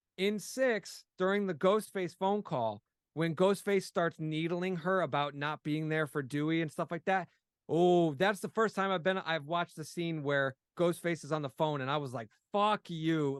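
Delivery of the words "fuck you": bitter, hate-filled, angry voice. Retelling a reaction to a taunting phone call: retelling hateful anger. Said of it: "it really felt like a moment where I hated Ghostface".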